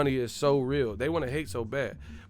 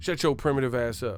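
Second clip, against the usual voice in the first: ordinary talk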